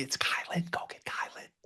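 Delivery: soft, breathy whisper under the breath. Retelling what happened, the speaker imitates Tyler whispering. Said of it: "Tyler was whispering".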